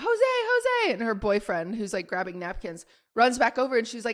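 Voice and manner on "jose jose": very high, panicked calling out. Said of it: "She starts panicking".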